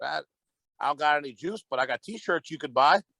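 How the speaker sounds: put-on calm, relaxed, easygoing, even-tempered accent. Retelling what the buddy said about selling t-shirts: calm accent imitating Mustang Mike. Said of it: "in his calm accent".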